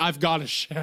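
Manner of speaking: acted, disgusted-sounding voice. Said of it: "and he's like".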